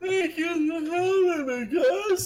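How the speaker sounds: very high, drawn-out words stretched through yawn. Guest thanking the hosts for having them on, yawning while speaking. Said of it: "Sorry, that was a yawn".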